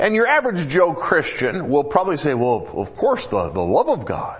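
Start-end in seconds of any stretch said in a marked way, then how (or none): 2.3-4.4 dopey, goofy, low-pitched sing-song voice. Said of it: "That's my goofy impersonation".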